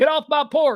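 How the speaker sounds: put-on Southern tough-guy accent. Speaker imitates a man he calls a coward, Southern guy accent. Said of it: "I just did a Southern guy".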